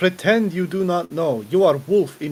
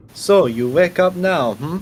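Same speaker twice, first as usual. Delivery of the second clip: slow, clumsy, fake Russian accent; 4 dB louder than usual. Trying out a character, the speaker addresses someone in a bad russian accent. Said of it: "I'm gonna try hand at a shitty Russian accent".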